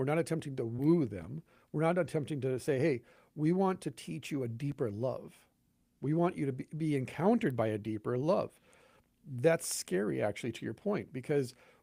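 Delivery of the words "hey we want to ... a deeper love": ordinary delivery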